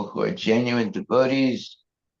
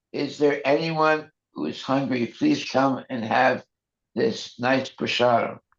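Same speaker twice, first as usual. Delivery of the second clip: ordinary talk, nothing marked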